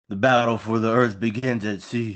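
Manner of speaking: put-on, dramatic movie voice. Reading a tagline aloud as asked, in their best movie voice. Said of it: "Do it in your best movie voice".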